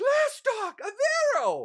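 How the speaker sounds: great emphatic call, names given heavy weight. Narrator voicing the floating image of a wizard elf calling out: great emphasis. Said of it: "in a great emphasis".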